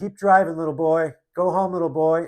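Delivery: acted shout. Retelling a road clash with a young driver, imitating own past shout. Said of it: "I forgot what I yelled".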